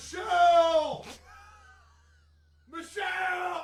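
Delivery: very high, shrill shouted call. Turning the mic away to try it out: yelling. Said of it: "so I can yell this".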